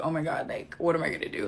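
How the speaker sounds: put-on worried tone. Retelling a friend's accident on the beach: retelling own worried words. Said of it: "I was so, like, worried".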